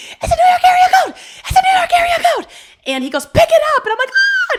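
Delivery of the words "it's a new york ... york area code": very high, loud scream at the top of range. Recalling a phone call from a new york area code, the speaker is acting out own screaming. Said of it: "And I started screaming".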